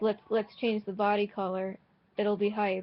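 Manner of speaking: ordinary talk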